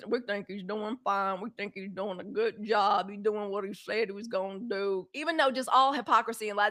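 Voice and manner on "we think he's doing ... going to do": garbled words, as if through a mouthful of rocks. Mocking to a listener how certain people talk, talking like a mouthful of rocks. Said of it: "They talk like they got a mouthful of rocks".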